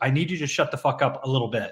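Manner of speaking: mock polite delivery. Retelling how the studio boss told people to talk less: imitating a boss saying it politely. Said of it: "but in a really polite way".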